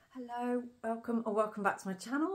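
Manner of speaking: high-pitched voice failing and dropping out. Greeting viewers at the start of a video: voice giving out. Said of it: "I don't know what happened to my voice there".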